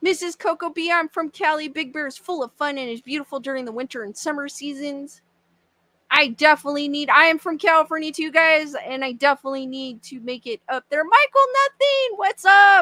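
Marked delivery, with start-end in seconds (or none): 11.0-12.8 very high voice, cracking and breaking. Greeting someone between reading messages aloud, voice cracking. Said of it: "I don't know why my voice is cracking today".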